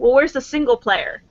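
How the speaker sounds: ordinary talk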